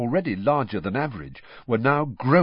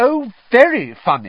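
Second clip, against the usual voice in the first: shrill, very high, loud, mocking sarcasm; 11 semitones higher, 9 dB louder than usual. A girl answers a gang of laughing Slytherin girls: sarcastic. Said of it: "Hermione said sarcastically".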